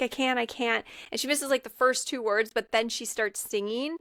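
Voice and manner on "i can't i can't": usual speaking voice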